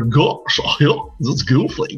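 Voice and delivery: high, slow cartoon dog voice. Recalling the voices he did to entertain people: Goofy voice. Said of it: "I'd be doing voices like".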